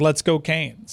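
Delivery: sarcastic, mocking, insincere cheerful tone. Describing how he sounds when he says it: mock-sarcastic tone. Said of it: "he sounds sarcastic when he does, like".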